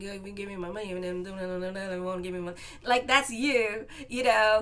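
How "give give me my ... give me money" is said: mumbled impression in a lower voice. Warning a listener, the speaker mimics the Goodfellas wig shop guy, mumbling like him. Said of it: "he's like mumbling".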